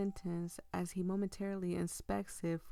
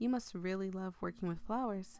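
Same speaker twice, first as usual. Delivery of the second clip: ordinary talk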